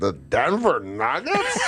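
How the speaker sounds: imitated very drunk man. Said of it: "This guy's so drunk he's a zombie".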